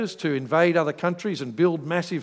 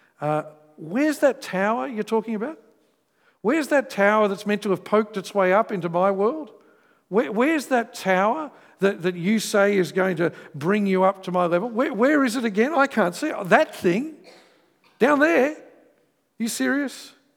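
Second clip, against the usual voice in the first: scornful, ridiculing, mocking sarcasm; 4 semitones higher than usual. Acting out the Tower of Babel story: sarcastic, mocking voice of God. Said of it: "the sarcasm of God".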